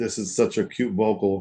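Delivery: sarcastic delivery. Retelling what was said on first hearing a record: retelling own remark sarcastically. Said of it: "I'm being sarcastic".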